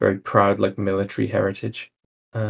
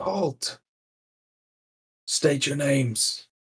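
high, loud shout carried downward; 5 semitones higher than usual. A game master voices a figure on a town wall, shouting down from a wall. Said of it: "calls down and shouts like".

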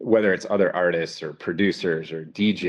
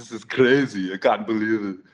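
put-on Austrian action-star voice, pitched higher than normal; 4 semitones higher than usual. Showing how you talk like Arnold, during Happy Birthday for Kelly, in an Arnold impression. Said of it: "when you talk like Arnold".

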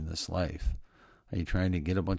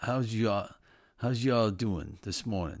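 put-on Italian accent; 3 semitones higher than usual. Greeting everyone this morning, doing an Italian voice. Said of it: "I need to do my, Italian voice this morning".

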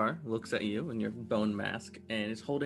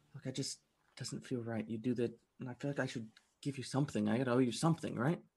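nervous, anxious, uneasy tone. Voicing a nervous character who has just been brought something, nervous. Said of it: "He's kind of nervous standing there and Look".

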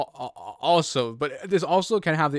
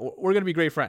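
ordinary delivery

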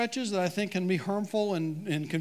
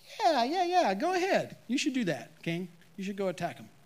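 mock, heavy sarcasm in a swooping sing-song; 2 semitones higher than usual. Retelling the story, the speaker voices Micaiah answering the king, mock-sarcastic Micaiah. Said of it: "He hears the sarcasm in Micaiah's voice".

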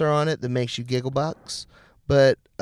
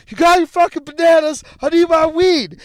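shrill, high-pitched, loud angry yelling; 7 dB louder than usual. Retelling a fight with a guy about errands: retelling own yelling. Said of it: "yelling at him".

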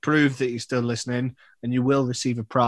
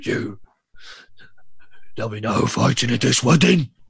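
put-on tough gangster character voice; 4 dB louder than usual. Podcast host redoing a voice from a previous episode, redoing a put-on voice. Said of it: "try and do the voice again".

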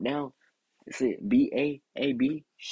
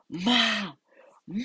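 acted, high, desperate, frantic begging scream; 8 semitones higher than usual. Retelling calling to his mother for help, the speaker acts it out: retelling screaming for mom. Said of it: "I was screaming".

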